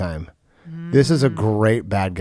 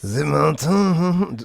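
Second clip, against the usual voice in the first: fake French accent, higher; 6 semitones higher than usual. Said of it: "French accent".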